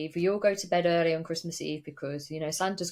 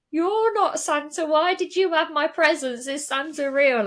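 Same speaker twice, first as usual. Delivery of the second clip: put-on very high, loud, tearful, crying little-kid voice; 11 semitones higher, 6 dB louder than usual. Retelling discovering presents as a child, imitating own childhood crying. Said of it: "I started crying, going".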